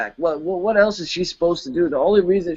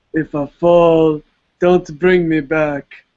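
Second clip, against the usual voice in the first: put-on emo voice; 4 dB louder than usual. Asked to say it again, doing an emo Jon Snow impression. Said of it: "emo John ... That was my best John impression".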